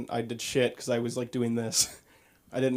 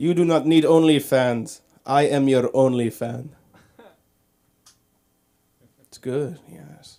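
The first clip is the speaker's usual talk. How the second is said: booming, very loud, vague put-on European accent; 2 semitones higher, 8 dB louder than usual. Imitating a European guy seen at a club hitting on women, in a European-guy impression. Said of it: "I'm gonna do an impression of a European guy".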